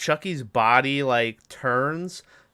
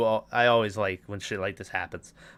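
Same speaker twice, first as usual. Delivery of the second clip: ordinary talk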